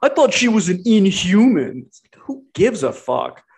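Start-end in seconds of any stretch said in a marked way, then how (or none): 0.0-1.8 high, slow mocking voice. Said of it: "Some asshole on Twitter was like".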